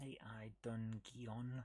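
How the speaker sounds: low-pitched, slow, drawn-out word.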